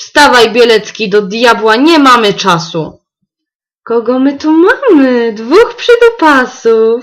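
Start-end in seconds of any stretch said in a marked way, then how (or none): 3.8-7.0 spiteful, malicious snickering giggle, drawn out. A transparent creature greets the two boys, giggling maliciously. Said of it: "Zachichotała złośliwie przeźroczysta kreatura".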